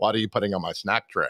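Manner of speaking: very low-pitched character voice. Rereading the general's comic strip line: Hannibal Lecter voice. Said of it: "Hannibal Lecter's voice".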